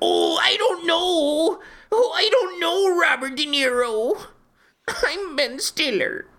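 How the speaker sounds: squeaky, very high-pitched put-on celebrity character voice. Acting out a Meet the Parents scene, doing a Ben Stiller impression. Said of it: "And here's my Ben Stiller impression".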